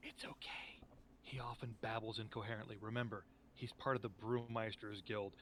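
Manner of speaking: hushed, confiding stage whisper. Playing Nacron, leaning in to explain Zardoz to you: Nacron's stage whisper. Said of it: "lean in this like like total stage whisper".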